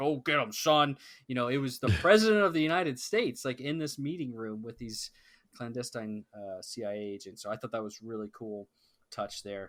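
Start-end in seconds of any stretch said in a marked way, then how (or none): 0.0-1.0 big, booming, drawn-out army general voice. Contrasting the president with a typical general, speaking in a big voice. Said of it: "talks in a big voice like".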